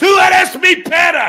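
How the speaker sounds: shouting. Playing an angry rant about a hypocrite, yelling. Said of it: "when somebody yells and then coughs".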